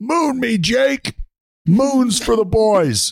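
acted yell, pitched very high and drawn out. Retelling walking into a bar and ordering for the team: retelling a yell. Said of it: "and then I yelled".

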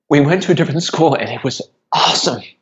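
near tears, choked-up, tearful voice catching. A father tells how his daughter's new school went, tearing up. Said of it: "Pardon me for tearing up".

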